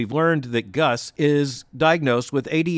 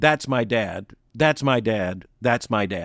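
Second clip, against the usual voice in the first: glowing with pride, said three times; 4 semitones lower than usual. Commentator retells what a son said to the crowd about his dad, retelling proud words. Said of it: "And his family, of course, was watching and applauding, and his seventeen-year-old son, Gus, was overcome with emotion and simply looking to the cameras and to the crowd pointed to his dad and just very proudly said three times".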